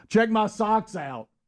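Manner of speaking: very high, proud, boastful screaming shriek. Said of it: "he kept screaming to all the nurses".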